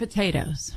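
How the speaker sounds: the word "potatoes" stressed. Repeating how the other speaker said it, checking the emphasis: stress on potatoes. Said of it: "so you emphasize the potatoes".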